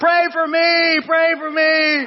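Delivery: put-on very high, dragged-out little boy's yell, acted. Speaker retells a little boy carried out the door, retelling a little boy's yell. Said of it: "he's yelling".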